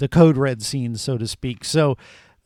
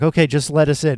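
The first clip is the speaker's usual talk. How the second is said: put-on deadpan, flat delivery. Retelling a film scene of people at the door: imitating a deadpan tone. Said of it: "that sort of deadpan tone".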